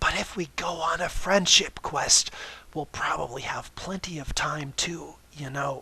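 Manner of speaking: theatrical, hushed stage whisper. Reading a story, one character turns to another and speaks in a stage whisper. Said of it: "spoke in a stage whisper".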